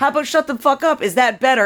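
high-pitched, fed-up screamed outburst. Recounting the husband's outburst that went out on air, retelling a scream. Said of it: "My husband screaming".

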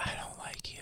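low, menacing whisper.

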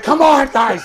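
desperate high loud pleading. Imitating a coach urging his team on, imitating a desperate Budenholzer. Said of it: "he looks so desperate".

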